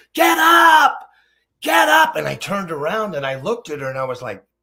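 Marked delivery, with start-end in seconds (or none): 0.1-2.1 shrill, very high, loud, slow drawn-out scream. Retelling a mother in a gymnasium screaming at her son: imitating a screaming mother. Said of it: "She's screaming like I've never heard".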